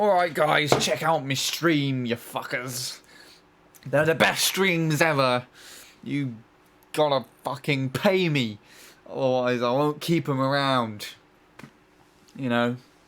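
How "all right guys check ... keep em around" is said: crude, greedy, pushy streamer voice, very loud. Mocking a greedy streamer who demands money: bad impression of a pushy streamer. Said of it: "the worst impression of any sort of streamer".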